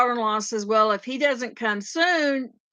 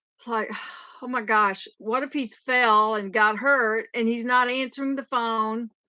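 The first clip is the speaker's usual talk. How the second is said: ordinary talk, nothing marked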